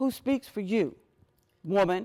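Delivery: mock severe, stern, commanding, demanding tone. Retelling what an older man said after she came off stage, mock-stern. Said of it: "he says very sternly".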